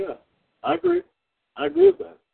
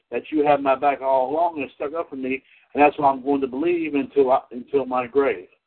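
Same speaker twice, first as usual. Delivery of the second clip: ordinary talk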